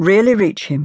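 ordinary delivery, nothing marked

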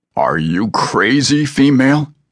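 very slow, incredulous tone. Hanging by one hand, a man questions the woman, in disbelief. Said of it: "asked in disbelief".

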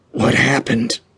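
dry, creaking, hoarse, croaked rasp. With a thick tongue and sticky mouth, Abraham asks a question: rasping. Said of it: "Abraham rasped".

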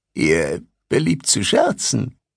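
hoarse, croaking voice. A narrator reads a pale student's reply to the first-person narrator, croaking. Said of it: "Mir gegenüber pflegelte sich ein junger Mann mit einem schwarzen Samtbarett auf dem Kopf, dessen Stickerei ihn als Angehörigen der Universität von Savran auswies, einer allseits geachteten und respektierten Einrichtung. Allem Anschein nach kehrte der Studiosus während der Ferien in".

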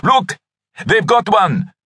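excited, eager, very high swooping voice. Narrator reads Kalume calling out, excitedly. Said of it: "Kalume called out excitedly".

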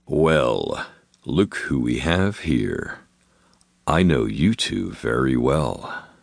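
low, imposing voice, very slow and well drawn out. A figure stops on the lower landing and speaks to the couple, low and imposing. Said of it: "it said in a voice so low and imposing".

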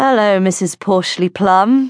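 hollow, insincere put-on politeness. A narrator reads a character greeting a woman in his least sincere voice. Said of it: "he called in his least sincere voice".

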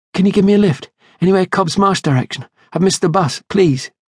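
very high, breathless and fast. A woman at a car window asks two elderly women for a lift, breathless. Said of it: "said breathlessly".

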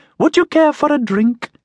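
very high, squeaky machine voice. A house servitor greets the prefects and offers them a drink, in a squeaky voice. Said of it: "it said in a squeaky voice".

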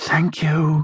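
light, high, barely-there half-whisper. Margaret, in her car as the engine finally starts, half-whispering. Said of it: "Margaret whispered".

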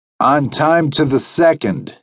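complacent, pleased-with-itself delivery. Seated at the bar, a man greets his waiting companion, complacent. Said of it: "he said in a complacent voice".

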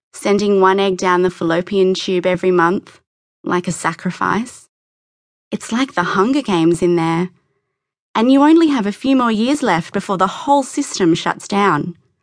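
plain reading voice

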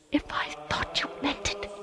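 quiet, hushed whisper. The father answers his daughter about the passage: whispered. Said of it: "he whispered".

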